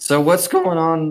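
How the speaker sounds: voice cracking. Speaker turning the question back in a casual chat about their day, weird voice crack. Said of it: "had a really weird voice crack".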